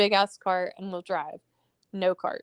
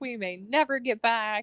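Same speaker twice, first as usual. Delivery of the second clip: put-on tearful, crying voice, higher pitch; 3 semitones higher than usual. Retelling how stranded New York friends cried about getting home: imitating people crying. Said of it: "The people from New York are crying".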